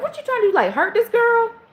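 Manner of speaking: mock scolding, berating tone, pitched very high. Retelling a phone call when someone called back: retelling berating someone. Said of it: "I was calling him all types of".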